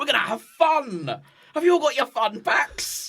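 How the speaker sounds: full-on high screaming yell, fun drawn out. Retelling a team building scene, imitating Alan Partridge screaming. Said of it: "he just screams at them".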